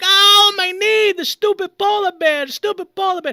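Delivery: high, loud pained yell. Retelling hitting a knee on the wall while asleep: retelling a scream of pain. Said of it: "And I scream".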